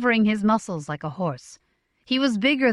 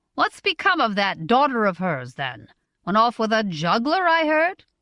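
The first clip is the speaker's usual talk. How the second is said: ordinary delivery, nothing marked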